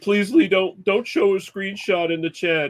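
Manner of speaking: acted, high-pitched, tearful crying voice. Retelling a board game loss, quoting the loser's plea: imitating Dan crying. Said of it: "he was crying, and he was like".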